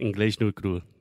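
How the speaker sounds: carioca Rio-style Portuguese accent. Host repeats a phrase after the guest notices his carioca accent: carioca Portuguese accent. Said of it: "I can't shake it".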